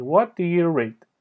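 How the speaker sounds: pitch dropping at the end on "read". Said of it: "در انتهای جمله تون صدا میاد پایین".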